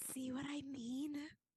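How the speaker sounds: hushed, whispered aside. Playing Lokio, right after the other character says they can still hear: whispering. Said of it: "Lokio whispers".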